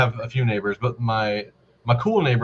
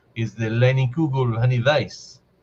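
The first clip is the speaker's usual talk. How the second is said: terrible, botched fake German accent. Speaker asking a friend about a beer he picked up, in a terrible German accent. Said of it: "Not that that was a German accent. That was actually quite terrible".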